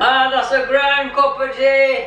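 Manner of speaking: very high-pitched, thrilled, excited shouting. Alone in a little shed, excited about the new floor space, shouting excitedly. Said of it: "I'm shouting".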